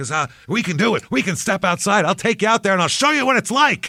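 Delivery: mock enraged, furious, very high, rising pitch. Retelling a bandleader threatening one band member, a mock-furious threat. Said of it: "he gets so mad at one guy".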